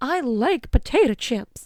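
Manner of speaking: slowed-down, full cartoon delivery. Chatting about food, the speaker slips into sounding like Goofy. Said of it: "Why did I sound like Goofy".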